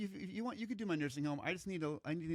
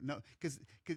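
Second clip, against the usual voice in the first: normal talking voice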